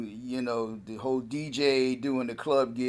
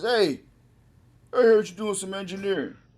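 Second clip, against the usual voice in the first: put-on man's voice with raised pitch; 8 semitones higher than usual. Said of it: "you sound like him too".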